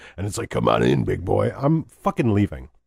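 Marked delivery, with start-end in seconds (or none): 0.5-1.5 very low, creaky, rough demonic growl. Telling a story about a voice behind the bedroom door: demon voice. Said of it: "there's like demon voice".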